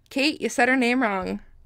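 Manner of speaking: ordinary talk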